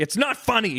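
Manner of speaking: acted-out scolding. Retelling a comedian scolding a laughing audience: imitating Jerry Seinfeld scolding. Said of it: "He scolds the audience".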